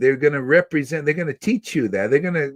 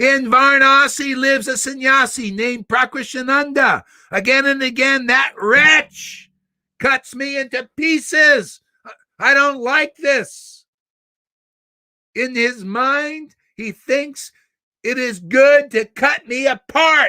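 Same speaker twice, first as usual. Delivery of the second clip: play-acted forceful indignant tirade, very high, slow; 10 semitones higher than usual. Retelling a speech about a sannyasi in Varanasi: mock-angry Lord Chaitanya speech. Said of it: "let me give you a little slight demonstration... how angry the Lord spoke this stuff".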